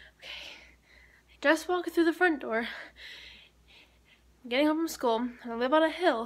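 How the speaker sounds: out of breath. Just walking in the front door, home from school, out of breath. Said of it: "so I'm literally out of breath".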